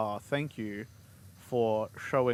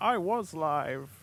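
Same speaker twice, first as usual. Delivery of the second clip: strange, weird, high put-on old man voice; 6 semitones higher than usual. Showing how a joke could come across, in a weird old man voice. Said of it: "if you did like weird old man voice".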